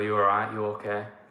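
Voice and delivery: normal talking voice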